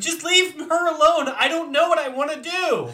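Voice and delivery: shrill yell at top volume, very high-pitched. Recalling a stressful time, re-enacting yelling at the book. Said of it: "I yelled at the book".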